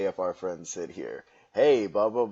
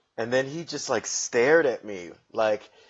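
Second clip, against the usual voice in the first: ordinary talk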